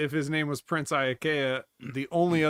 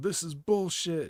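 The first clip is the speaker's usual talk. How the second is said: angry outburst, held back; 3 semitones higher than usual. Recalling a man yelling at the announcer on TV, retelling a yell. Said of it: "he yelled he yelled".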